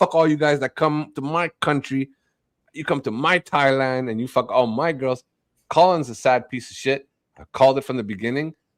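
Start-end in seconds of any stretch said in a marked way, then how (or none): 0.0-5.2 pissed-off, bitter, resentful, angry tirade. Acting out a man ranting at foreigners in his country, mock-angry. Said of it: "He's like pissed off at the world".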